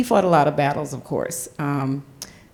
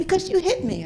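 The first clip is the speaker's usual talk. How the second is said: put-on very high, tearful crying voice of a young child; 14 semitones higher than usual. Retelling their answer as an eight-year-old after punching a kid: imitating own crying speech. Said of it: "And I'm crying saying it".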